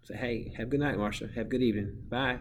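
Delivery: ordinary talk, nothing marked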